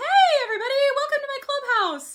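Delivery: voice pitched way up like a cartoon. Showing how talking higher up sounds: Mickey Mouse voice. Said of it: "So it's kinda like Mickey Mouse".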